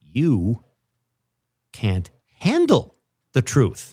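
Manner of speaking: very slow, unhurried delivery. Taking a turn at a voice-acting game, delivering the line like talking to a child. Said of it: "I said it very like I was at uh, like a family Sunday dinner talking to a child".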